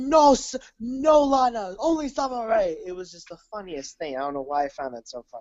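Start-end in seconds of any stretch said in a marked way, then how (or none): 0.0-2.8 very slow, high, stuttering, halting delivery. Retelling a wrestler's line on SmackDown: imitating Rusev. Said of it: "he was like".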